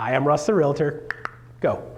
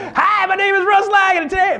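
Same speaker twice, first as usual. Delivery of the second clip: over-the-top, very high, shrill, loud salesman voice; 6 dB louder than usual. Explaining how pitching too high sounds, the speaker demos a used car salesman voice. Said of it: "used car salesman thing".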